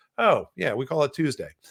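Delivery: ordinary talk, nothing marked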